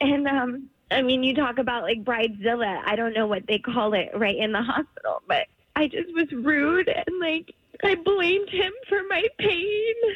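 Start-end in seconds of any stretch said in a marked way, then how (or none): 7.8-9.9 slow, tearful, very emotional crying. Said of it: "I'm super emotional right now".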